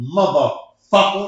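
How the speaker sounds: heavy stress on mother and fucker in motherfucker. Showing the audience how to say it: emphasis on motherfucker. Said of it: "let's all say it together".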